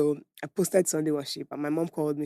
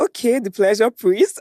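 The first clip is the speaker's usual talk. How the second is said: mock sarcastic teasing, higher and louder; 6 semitones higher, 7 dB louder than usual. Retelling how mom teased about the ministry: imitating mom being sarcastic. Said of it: "she was being sarcastic".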